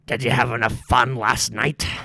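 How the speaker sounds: put-on loud, gruff old pirate man voice. Voicing an old man knocking at the pirates' door: gruff old man voice. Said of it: "gruff old man with one eye".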